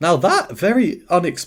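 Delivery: voice cracking up high mid-word, cut short. Commentating on an unexpected sound, voice cracking. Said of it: "sorry about that voice crack".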